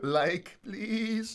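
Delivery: fake pleading. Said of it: "They're just beggars".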